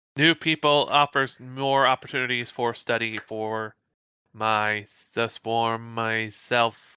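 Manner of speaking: deadpan, flat, low, level monotone drone. A character answers another's question, flat monotone voice. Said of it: "She speaks in a very sort of monotone voice".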